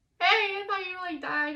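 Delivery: mock frantic, tearful, high, loud panicked blurt. Retelling calling a boyfriend she thought had died: retelling own panicked call. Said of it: "totally panicked".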